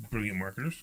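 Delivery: soft, sarcastic-sounding tone.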